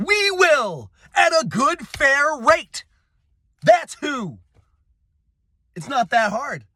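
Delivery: worked-up outburst, voice going very high. Addressing listeners in a political monologue, getting worked up. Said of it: "I'm getting a little worked up".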